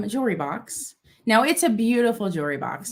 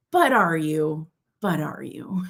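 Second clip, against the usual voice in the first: sassy tone, lower pitch; 5 semitones lower than usual. Voicing a woman pictured on an art piece: sassy voice. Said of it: "they're just being so sassy".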